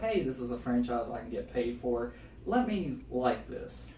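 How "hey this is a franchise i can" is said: plain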